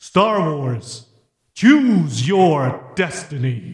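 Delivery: lowest possible voice, deep and slow. Recording a line for someone to add reverb to, speak in a deep voice. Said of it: "That's as deep as I can go".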